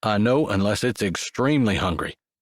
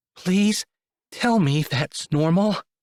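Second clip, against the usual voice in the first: very high, weak, trembling voice; 9 semitones higher than usual. Reading a story where a passenger begs for reassurance: weak, shaky voice. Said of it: "in a weak, shaky voice".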